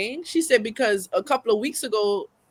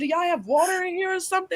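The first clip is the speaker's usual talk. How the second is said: play-acted high, frantic, overwhelmed, losing-it outburst; 8 semitones higher than usual. Retelling how he stood up cursing and grabbing the wall: imitating someone losing it. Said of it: "he's losing it".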